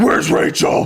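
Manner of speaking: angry, loud voice. Retelling a movie scene where he slams the table: Batman impression. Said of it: "he slams the table and says".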